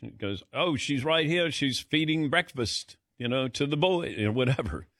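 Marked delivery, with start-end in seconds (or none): 0.5-4.1 higher-pitched put-on English accent impression. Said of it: "how was that accent?".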